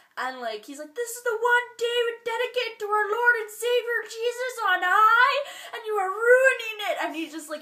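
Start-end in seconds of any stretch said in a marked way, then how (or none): 1.0-7.0 very high, shrill, very loud screaming rant. Describing a comedy sketch where a dad screams at his kids: retelling Adam Devine screaming. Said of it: "he's screaming at his kids".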